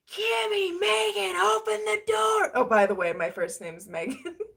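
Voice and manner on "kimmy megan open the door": mock top-of-lungs screaming, very high and rough. Retelling how a friend's father always yells, imitating him screaming. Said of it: "he's just screaming at the top of his lungs".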